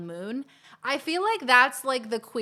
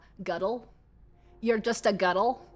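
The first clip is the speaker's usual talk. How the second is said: put-on "girl" said as "guttle" in Scottish accent. Imitating how Scottish people say girl, in a Scottish accent. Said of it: "The way that Scottish people say the word girl".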